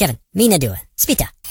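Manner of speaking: put-on cartoon gibberish voice. Showing how the little minions talk, in a Minions voice. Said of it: "These little minions that talk like this".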